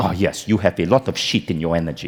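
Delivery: put-on woman's low French accent throughout. Retelling a meeting, the speaker quotes Marie's reply in her French accent. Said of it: "in her French accent".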